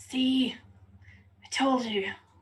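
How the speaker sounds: slow, loud stage whisper meant to be overheard. Whispering to two party members about a suspicious stranger: loud stage whisper. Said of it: "again whisper, but in a way that everyone can hear".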